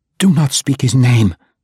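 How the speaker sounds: firm, insistent, disgusted. A woman forbids a man to speak a name, insisting. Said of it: "Dahlia insisted, and she spat upon the ground".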